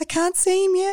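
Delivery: put-on tearful voice. Retelling ringing Jim from the hotel in tears: imitating own tearful words. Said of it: "I'm in tears and I'm going".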